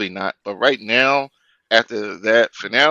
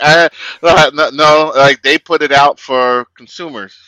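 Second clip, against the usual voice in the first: loud, pissed-off ranting voice. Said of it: "You sounded like those guys that were pissed off".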